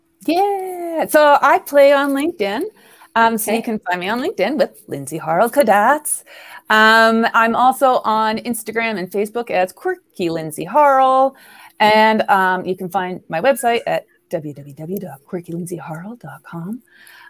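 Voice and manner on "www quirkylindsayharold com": soft radio DJ style announcer voice. Sharing where to find her online, giving her website: radio announcer voice. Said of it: "that's a radio voice".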